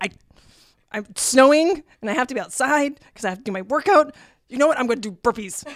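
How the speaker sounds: worked-up, fed-up, exasperated, upset tone, acted out. Retelling own words about working out in the snow, imitating own upset past self. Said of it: "I can't tell you how upset I was".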